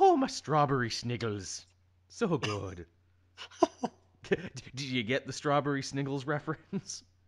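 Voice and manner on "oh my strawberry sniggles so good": swooping, put-on cartoonish Irish accent. Joking about accents, the speaker does a Lucky Charms Irish accent. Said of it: ""come get your lucky charms" version".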